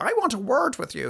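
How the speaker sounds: put-on strangulated South Dublin voice. Retelling what a woman who held him responsible said, in her strangulated, adenoidal south dublin voice. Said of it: "That strangulated, adenoidal South Dublin voice".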